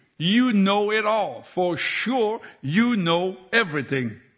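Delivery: plain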